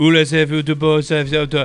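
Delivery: flat fake French accent. Imagining a crowd going crazy, adding words in a flat french tone. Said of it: "speaking in a very flat French tone".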